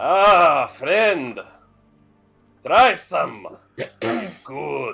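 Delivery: put-on thick Slavic accent. A vampire comes up and offers a cup to a guest, in a very heavy Slavic accent. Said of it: "In a very heavily Slavic accent".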